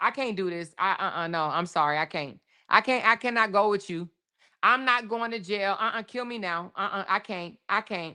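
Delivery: mock pleading tone, repeated over and over. Replaying the arrested woman's refusal to the officers: imitating her pleading. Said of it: "told the officers".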